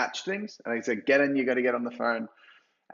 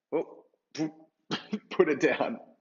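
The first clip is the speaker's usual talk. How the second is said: heavy, thick put-on Indian accent; 4 semitones higher than usual. Speaker retelling a salesperson hanging up on prospects, in a thick Indian accent. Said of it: "like super thick Indian accent".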